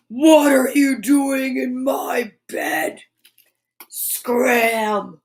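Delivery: deep rumbling growl, 'scram' stretched out. Reading a bedtime story, a voice finds Kip and the cats in its bed: big, deep, growly voice. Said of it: "a big, deep, growly voice said".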